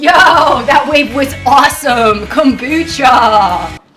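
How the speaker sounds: loud, drawn-out, put-on surfer-dude drawl. Playing a surfer just off a big wave: put-on surfer voice. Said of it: "P O V, I'm a surfer".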